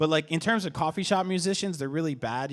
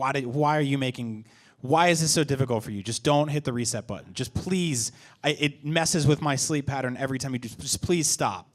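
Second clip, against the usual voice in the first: ordinary talk, nothing marked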